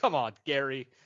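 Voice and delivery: disgusted voice. Acting out stormtroopers walking out of the break room: acting disgusted stormtroopers. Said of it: "a crowd of disgusted stormtroopers walking out".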